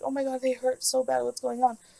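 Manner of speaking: put-on almost crying voice. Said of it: "crying almost".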